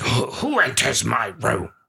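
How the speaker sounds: put-on angry voice. Recalling a voice that asked who enters the room: mock-angry voice. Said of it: "it was mean, it was old, it was raspy. ... It was angry".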